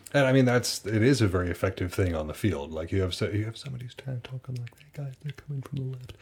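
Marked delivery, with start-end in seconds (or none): 4.8-6.2 weak, soft, rushed call that won't carry. Showing how a teammate's callout on the field goes unheard: quiet, unheard callout. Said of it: "Nobody's going to hear that".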